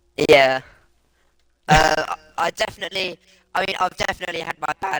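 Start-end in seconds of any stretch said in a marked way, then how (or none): 3.8-5.0 voice cracking, breaking on a word mid-sentence. A new commentator talks about his own past bad moments, voice cracking. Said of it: "Oh my god, voice crack".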